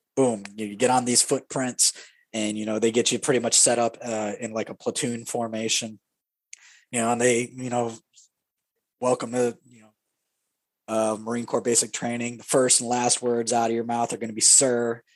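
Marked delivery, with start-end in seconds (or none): none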